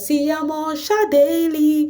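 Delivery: sugary sweet, high voice. Speaker retells how Lema reacted to a man in an advert: imitating Lema's sweet voice. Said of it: "with that her sweet voice would be like".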